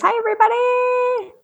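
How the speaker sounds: very high squeaky voice. Greeting everybody after asking how high the voice can go: high-pitched voice. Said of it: "How high can I get my voice?".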